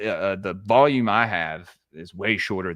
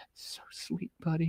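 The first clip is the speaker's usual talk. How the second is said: whispered, mock-sweet, sugary teasing; 9 semitones higher, 13 dB quieter than usual. Retelling teasing a son about his first date: retelling own teasing tone. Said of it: "kinda fucking with him".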